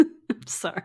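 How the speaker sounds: breathless, laughing delivery.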